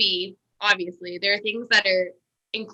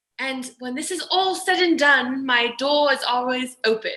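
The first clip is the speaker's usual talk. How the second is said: put-on British accent, pitched higher; 5 semitones higher than usual. Speaker quotes what a man told them at the very end, in a British accent. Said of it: "I'll say this in my British accent".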